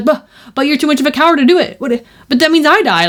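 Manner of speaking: play-acted frantic, stumbling, high-pitched panic. Retelling a game cutscene where the fairy is freaking out: imitating a panicked fairy. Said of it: "she starts freaking out".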